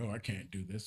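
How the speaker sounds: reluctant, complaining, griping tone. Imitating people who complain before they even start: imitating people complaining. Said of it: "they complain".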